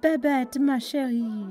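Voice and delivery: high-pitched, cooing, affectionate voice. Reading a story, a woman pulls two people apart and addresses one, cooed. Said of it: "she cooed".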